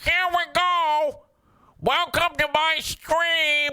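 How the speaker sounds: very high, annoying, obnoxious gamer voice. Acting out starting a Twitch stream, in America's worst voice. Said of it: "America's worst voice".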